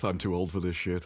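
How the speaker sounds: low muttered grumble under the breath. Speaking in character while gear is handed out: muttering under breath. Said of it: "I'm just muttering under my breath".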